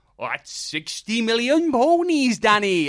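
put-on weird Cockney accent with Welsh underneath. Retelling another person's quip to the group, weird Cockney accent with Welsh. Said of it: "weird Cockney accent with a Welsh".

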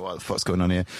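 ordinary delivery

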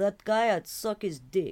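put-on Russian accent, slowly spoken. Imagining an old woman's reply about Rasputin: Kane Tanaka with Russian accent. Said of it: "She has a Russian accent".

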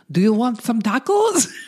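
put-on Russian accent. Quoting a woman offering tacos, in a put-on Russian accent. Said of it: "she also has a Russian accent at the beginning of this thing. She's like".

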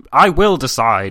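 gruff, rough-edged voice. Nicholas replies after an awkward silence, in a rough tone. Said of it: "replied in a rough tone".

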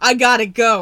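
loud, urgent announcer-style delivery.

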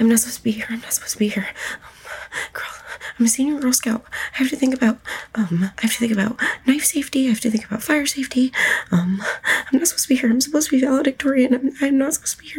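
fast, rattled-off muttering under the breath. In a role-play game, the player voices Zora muttering under her breath. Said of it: "sort of muttering under her breath".

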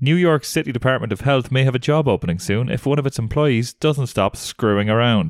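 ordinary talk, nothing marked

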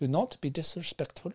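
very soft, hushed, put-on German accent. Speaker trying out an accent; attempted German accent. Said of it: "Did I finally get a German accent".

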